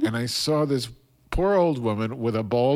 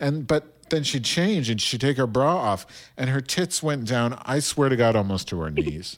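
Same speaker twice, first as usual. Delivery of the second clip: ordinary delivery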